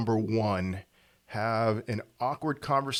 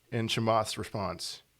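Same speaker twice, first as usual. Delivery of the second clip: normal talking voice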